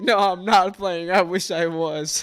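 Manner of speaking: talking through laughter. Retelling telling her mom about twins on the phone: retelling laughing while talking. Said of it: "I'm just laughing on the phone".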